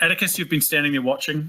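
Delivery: ordinary delivery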